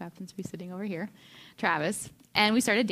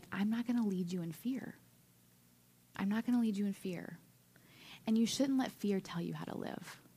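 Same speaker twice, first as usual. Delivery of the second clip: quiet, soft, hushed whisper; 7 dB quieter than usual. Retelling what God whispered on a walk back to the campsite: imitating God whispering. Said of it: "I remember hearing God whisper that".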